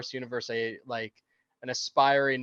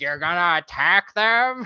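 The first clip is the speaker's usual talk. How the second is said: loud, mean, nasty taunting tone; 5 semitones higher, 8 dB louder than usual. Retelling a scene where Han mocks Leia: mean impression of Leia. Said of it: "Han does an impression of Leia, like, a very mean one".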